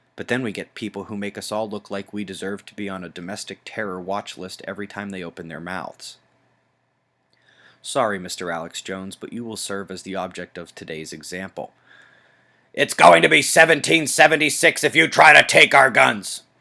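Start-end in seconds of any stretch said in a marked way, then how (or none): 12.7-16.4 put-on high, loud ranting pundit-style shout. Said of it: "that was my A J impression".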